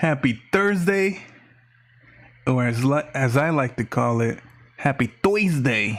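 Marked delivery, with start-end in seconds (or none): 4.8-6.0 just a hint of Jersey accent. Host greeting a live YouTube audience, with a little Jersey accent. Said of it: "with a little bit of uh, Jersey accent".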